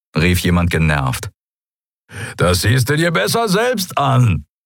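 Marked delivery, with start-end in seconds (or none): 2.4-4.4 high, incredulously amused voice. The Skria answers someone's annoyed question, incredulously amused. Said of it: "Der Skria klang ungläubig amüsiert".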